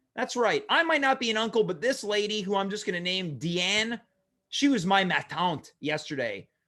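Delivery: ordinary delivery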